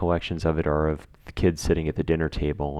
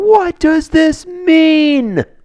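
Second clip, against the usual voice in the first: shrill, very high, very loud, mean, stretched scream; 11 dB louder than usual. Retelling a film scene where the father runs into the street, imitating a scream. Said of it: "starts screaming".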